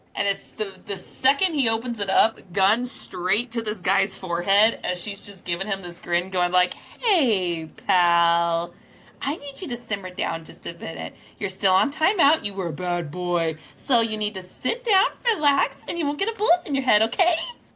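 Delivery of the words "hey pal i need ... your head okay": cheery, doll-like tone with "pal" stretched out. Roleplaying a character holding a gun to a man's forehead, in a Barbie voice. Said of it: "she sounded like Barbie the whole time".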